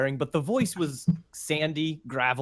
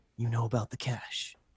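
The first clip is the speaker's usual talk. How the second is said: speaking low, hushed and quiet; 3 semitones lower, 6 dB quieter than usual. A figure leaps from the roof, lands in front of you, speaks in a hushed voice. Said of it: "speaking in a hushed voice".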